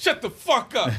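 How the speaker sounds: teasing, playfully angry snapping outburst. Snapping back at a teasing friend: mock angry snapping. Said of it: "Why are you so angry?".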